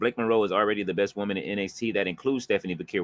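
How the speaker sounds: normal talking voice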